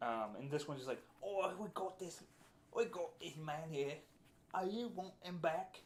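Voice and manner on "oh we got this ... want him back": very bad, high, put-on Cockney goblin accent. Voicing a goblin holding a captured man, in a very bad Cockney goblin accent. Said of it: "some very bad Cockney accents".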